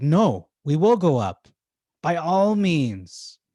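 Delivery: confident, authoritative, bold, loud, very slow, drawn out. Comparing two versions of a line, the speaker imitates the bolder one, mock-confident and authoritative. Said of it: "Whereas here he's like".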